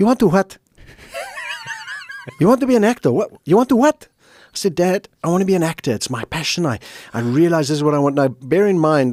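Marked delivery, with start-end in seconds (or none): 0.0-4.1 put-on very high, incredulous Greek accent. Retelling telling his father he wants to be an actor: imitating dad's Greek accent. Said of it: "that Greek accent".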